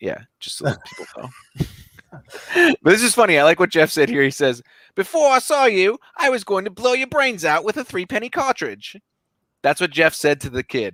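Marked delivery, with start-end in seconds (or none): 4.9-9.0 very high, pitched-up voice. Quoting what Jeff said to the kid, in a Jeff the spirit impression. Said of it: "my impression of Jeff is way better than yours".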